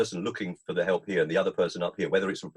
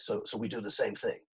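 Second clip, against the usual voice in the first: put-on heavy, thick, laid-on New York accent; 3 semitones higher, 7 dB quieter than usual. Retelling a conversation where a man asked about their work, big New York accent. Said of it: "he said in his big New York accent".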